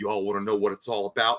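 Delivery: deepened, low, put-on character voice. Imagining how a movie character would have talked, in a deep voice. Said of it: "he would have got like this deep voice".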